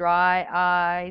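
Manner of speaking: loud, flat monotone. Recalling a dry eyes commercial as an example: Ben Stein monotone. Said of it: "that's being monotoned".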